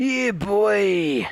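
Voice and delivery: little Cockney geezer voice, drawn out. Having just said you have his impression down quite well, repeat it: Vaughan impression, Cockney geezer voice. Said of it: "my Vaughan impression down quite well".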